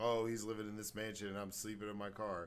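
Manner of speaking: ordinary delivery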